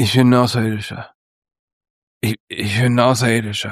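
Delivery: mock drunken slurring. Imitating a man who claims to be an alien, imitating slurred speech. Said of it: "ich versuche ein bisschen zu lallen".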